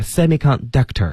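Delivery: semiconductor stressed at the back, falling end.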